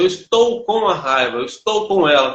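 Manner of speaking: ordinary delivery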